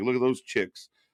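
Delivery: plain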